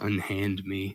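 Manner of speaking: low, deep, bubbling, gurgling voice. Narrating a scene where a voice echoes out: deep gurgling voice. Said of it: "it's this deep gurgling voice and it says".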